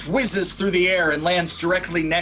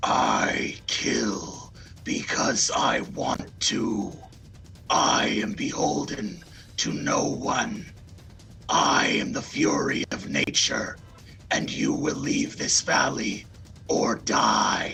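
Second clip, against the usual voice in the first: whispered, low, breathy, growling werewolf voice; 6 semitones lower, 4 dB quieter than usual. Game master voicing the werewolf as it turns on the players: low growling werewolf voice. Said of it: "in a low growling voice".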